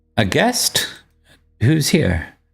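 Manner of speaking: high, swooping woman's voice calling out. Narrating a role-play scene as players reach a closed cabin door, woman's voice calling out. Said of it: "a woman's voice call out".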